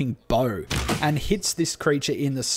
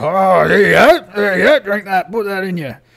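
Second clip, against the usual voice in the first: very loud, high fantasy orc voice; 5 semitones higher, 9 dB louder than usual. Voicing the orc who hands over a drink: orc voice. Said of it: "the orc brings out the drink and goes".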